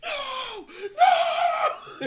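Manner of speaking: desperate scream, very high, shrill and very loud. Retelling a story where a batter on his last at-bat screams at the plate, imitating the scream. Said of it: "And he's screaming at the plate".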